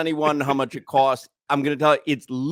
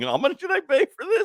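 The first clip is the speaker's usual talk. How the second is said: put-on screaming, higher pitch. Imitating adults at the pool complaining about the price: imitating screaming adults. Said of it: "screaming adults going".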